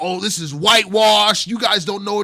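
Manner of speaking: loud, high-pitched yell shouted upward. Describing an audience member standing up to protest, retelling a protester's yell. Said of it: "starts yelling".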